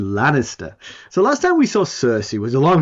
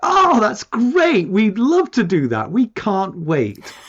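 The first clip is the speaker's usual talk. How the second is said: insincere, high, drawn-out put-on enthusiasm; 6 semitones higher than usual. Retelling a reply to an unwanted invitation: imitating fake enthusiasm. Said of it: "we both lied through our teeth".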